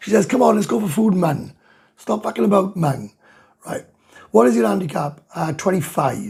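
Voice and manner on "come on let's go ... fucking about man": put-on speaking in a picked-up Welsh accent. Quoting a girlfriend who picked up the accent: imitating girlfriend's Welsh accent. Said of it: "she even picked up the Welsh accent".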